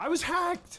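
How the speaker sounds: voice climbing up, rising very high. Answering a question, voice rising up. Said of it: "listen to his voice raise up".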